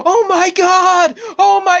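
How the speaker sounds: exaggerated, very high, very slow, loud stretched-out outcry. Complaining that a commentator overdoes everything: over-the-top Michael Cole impression. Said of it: "over exaggerates everything. He's like".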